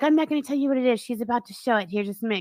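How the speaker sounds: put-on giddy tone. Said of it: "all giddy".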